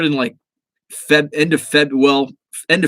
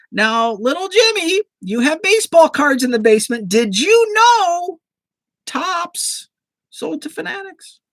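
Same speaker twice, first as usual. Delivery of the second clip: put-on poor old grandma voice, very high and slow. Imagining a grandparent's phone call this morning, imitating a grandma's voice. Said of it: "That's my really poor impression of a grandma".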